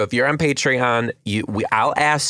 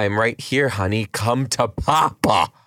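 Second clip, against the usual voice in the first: put-on creepy old man voice; 3 semitones lower than usual. Retelling what a man said while patting the seat beside the speaker, creepy old man impression. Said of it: "this little fucking creepy man pats on my seat".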